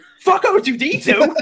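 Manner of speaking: very high, shrill, exasperated yelling outburst. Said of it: "he's just yelling at them like".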